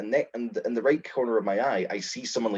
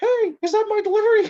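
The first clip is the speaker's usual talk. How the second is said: very high, very loud, squeaky puppet voice; 9 dB louder than usual. Telling a story about a puppet appearing at the door, in a squeaky puppet voice. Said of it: "this squeaky voice".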